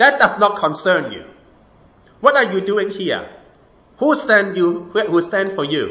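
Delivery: acted rude, hostile tone. Telling a story, quoting a man answering a priest: retelling a rude reply. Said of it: "the man was really rude".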